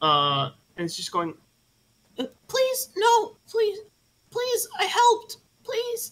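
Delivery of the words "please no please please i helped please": really squeaky, very high-pitched pleading voice. Acting out an imagined voice in someone's head, really squeaky voice. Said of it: "you hear this really squeaky voice in your head".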